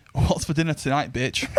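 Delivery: ordinary talk, nothing marked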